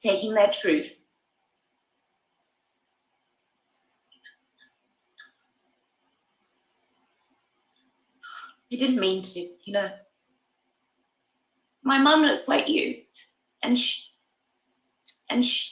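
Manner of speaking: crying while talking. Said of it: "She more crying".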